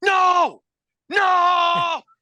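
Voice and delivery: loud, high-pitched yelling. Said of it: "Michael Scott yelling".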